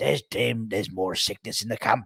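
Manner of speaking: talking like a pirate. Starting the main news of the video, sounding like a pirate. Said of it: "I don't know why I sound like a pirate".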